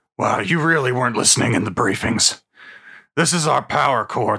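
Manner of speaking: gruff dwarf voice. A dwarf fighter answering a party member who missed the briefings, gruff Drillheart voice. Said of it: "[name] Drillheart, a gruff, one-armed mountain dwarf fighter".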